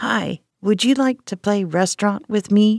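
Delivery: rough, gritty, gravelly, raspy voice. A little boy asks a woman to play restaurant with him, in a flat, gravelly voice. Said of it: "asked a flat, gravelly voice".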